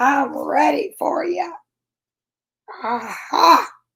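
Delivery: put-on gravelly old-woman voice. Reading a story aloud, voicing Miz McGrizz to the terrified cubs: gravelly voice. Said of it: "in a gravely, gravelly voice".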